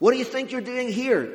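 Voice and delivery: reproachful, accusatory tone. Showing how readers often hear the question to Elijah, in an accusing tone. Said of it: "we read them as accusatory. ... You know, that kind of way".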